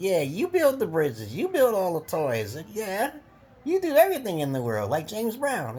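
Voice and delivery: thick, dripping, swooping, sing-song sarcasm. Retelling what he tells women: retelling his own sarcastic praise. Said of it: "I'm sarcastic as a motherfucker".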